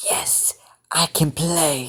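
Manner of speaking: slow, deliberate, stretched-out character voice. Voicing Izuku in a fan story, trying the Shigaraki voice. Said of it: "the Shigaraki voice that I did".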